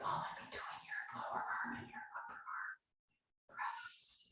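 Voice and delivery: hushed, very quiet, breathy whisper. Leading an arm-squeeze exercise in a quiet room, whispering. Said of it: "I'm whispering".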